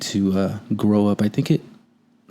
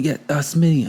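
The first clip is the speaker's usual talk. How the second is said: mock yelling in a higher voice; 2 semitones higher than usual. A speaker retells an emergency scene, acting out a colleague calling out an urgent order; imitating someone yelling. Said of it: "Timmons was yelling about something".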